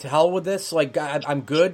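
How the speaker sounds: ordinary delivery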